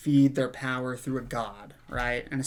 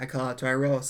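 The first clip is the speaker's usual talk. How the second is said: usual speaking voice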